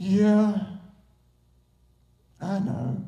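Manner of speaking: mock dejected, defeated, most discouraged voice. Retelling a man's reply on the phone, retelling a sad, discouraged reply. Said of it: "in the saddest, most discouraging voice".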